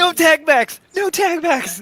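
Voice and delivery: very high, shrill shouted yell. Playing a character who just got tagged: yelling in character. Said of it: "I yell".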